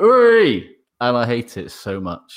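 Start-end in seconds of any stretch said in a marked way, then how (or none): 0.0-0.7 shrill, very high, loud shouted hey. Mocking the same commentator's habit: imitating a loud "Hey!". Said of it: "prescient to him going".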